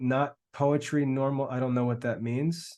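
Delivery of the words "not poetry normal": plain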